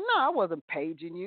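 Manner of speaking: acted nasty retort tone. Retelling answering a man who asked if she paged him: retelling own nasty reply.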